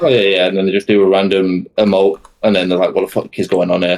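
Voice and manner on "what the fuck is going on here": ordinary talk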